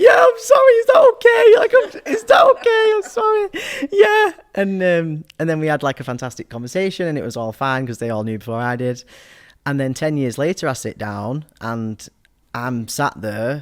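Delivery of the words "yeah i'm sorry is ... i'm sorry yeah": very high, very loud, shrill, terrified, tearful sobbing. Retelling own words while crying and terrified: imitating own terrified apology.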